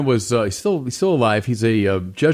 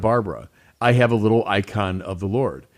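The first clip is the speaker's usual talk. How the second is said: normal talking voice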